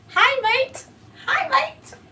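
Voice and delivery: drawn-out, slow Australian accent, pitched very high. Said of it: "Is that how y'all say it out there?".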